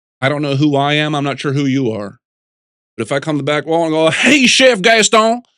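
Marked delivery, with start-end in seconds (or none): 4.1-5.4 fake Texan accent, very high-pitched. Showing how an improv entrance line can sound: put-on Texas accent. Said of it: "suddenly I'm from Texas or something".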